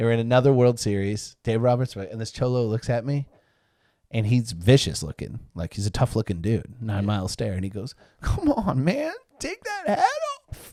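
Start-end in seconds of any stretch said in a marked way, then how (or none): 8.2-10.7 mock, very high, tearful, choked-up, angry, swooping voice. Retelling what a tough-looking guy told him about his Red Sox hat, imitating a choked-up angry plea. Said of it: "he was like choked up, but like angry".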